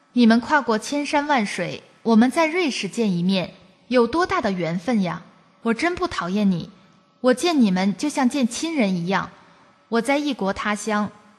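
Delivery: ordinary talk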